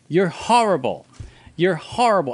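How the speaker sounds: acted small high-pitched mild yell. Retelling a movie scene where Mary runs upstairs: imitating Mary screaming. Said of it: "Mary runs upstairs screaming".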